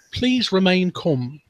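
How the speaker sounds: put-on upper-class British accent. Showing how the line should be said, posh British accent. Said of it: "you should do that in a posh British accent".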